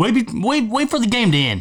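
high-pitched, mild, mock angry yell. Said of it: "Monk or Dave was cussing at us".

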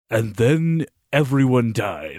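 deep, slow voiceover narrator voice. Describing a vision scene, mimicking the voice that explains it, deep narrator voice. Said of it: "you have the deep voice that's like".

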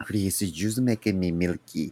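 low-pitched, non-native broken English, words misplaced. Retelling a lover's dirty talk across a language barrier: imitating Osmario. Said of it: "he'd be like".

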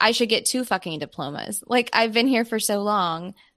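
plain

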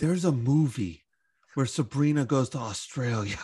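awed, marveling tone full of wonder. Telling the others about a movie they just found, full of wonder. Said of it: "You said that with such wonder in your voice".

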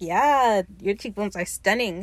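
ordinary talk, nothing marked

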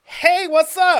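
shrill, very high, very loud camp voice.

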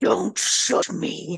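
possessed-sounding, rough, creaky demonic voice. Retelling a man's reply to a woman who shushed him, in a demonic voice. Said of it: "in his demonic voice".

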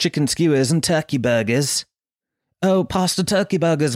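fake, put-on English accent. Telling friends about cooking on disposable barbecues, in a put-on english accent. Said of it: "I put on an English accent".

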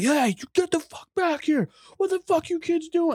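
acted out, very high, enraged, furious screaming. Telling a story about a man yelling at kids, retelling an angry scream. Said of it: "he's screaming at him like".

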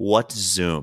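put-on flat deadpan voice. Retelling how a man who had never heard of Zoom answered, imitating someone deadpan. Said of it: "deadpan looks me in the face and goes".

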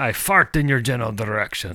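ridiculous, outrageous, over-the-top put-on French accent. Joking about French whiskey, finally doing an outrageous French accent. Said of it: "speak in an outrageous French accent".

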